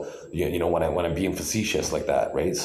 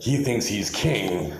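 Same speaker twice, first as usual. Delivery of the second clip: sarcastic, ironic, mocking delivery; 3 semitones higher than usual. Commenting on a car's european license plate, sarcastic. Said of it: "that's a sarcastic tone that I'm using right now".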